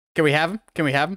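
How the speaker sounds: put-on pestering child's voice. Picturing Dwayne Johnson asking for Henry Cavill back: Dwayne Johnson pestering like a kid. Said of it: "Like a kid going".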